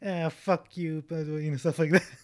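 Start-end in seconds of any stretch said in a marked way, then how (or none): 0.0-1.0 exaggerated, hammed-up, way over-the-top delivery. Describing an Oscar-winning supporting role, quoting it: exaggerated Allison Janney impression. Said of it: "really, uh, exaggerated performance".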